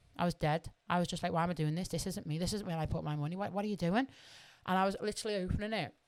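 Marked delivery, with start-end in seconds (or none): 1.3-4.1 words said in mock crying. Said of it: "I'm literally crying at myself".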